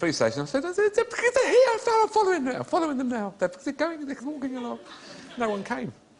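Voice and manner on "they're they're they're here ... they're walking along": high, loud, squealing silly voice. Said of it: "it's 'cause you were doing a silly voice".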